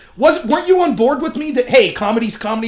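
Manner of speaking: ordinary talk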